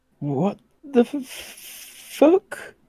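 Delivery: high-pitched, slow, shocked outburst, blurted.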